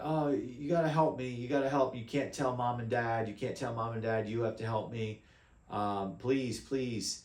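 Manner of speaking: put-on acted hysterical, desperate girl voice, begging tone. Retelling a scam call with a young girl in the background: imitating a hysterical girl.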